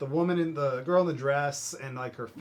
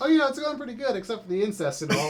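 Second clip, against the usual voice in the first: mock very casual, breezy, offhand, pitched up; 8 semitones higher, 5 dB louder than usual. Retelling a movie kid's line to a therapist: imitating a very casual delivery. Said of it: "the kid just very casually says".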